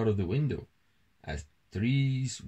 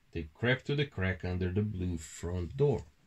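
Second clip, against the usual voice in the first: ordinary delivery, nothing marked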